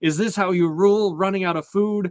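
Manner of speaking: put-on raging, furious, high-pitched scream. Retelling how a character screams at the man in charge: imitating Aegon screaming. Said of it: "he just screams at him".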